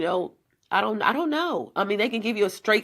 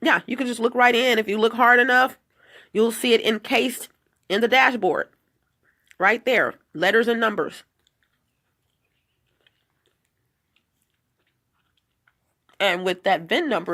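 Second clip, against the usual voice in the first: talking while chewing, louder; 3 dB louder than usual. Explaining something while having a meal, talking while eating. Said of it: "excuse me for talking and eating".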